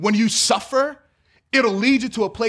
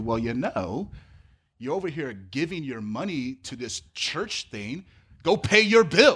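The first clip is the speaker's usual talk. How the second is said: mock snide, sarcastic, underhanded tone; 7 semitones lower, 5 dB quieter than usual. Acting out what people say to believers, sarcastic remark.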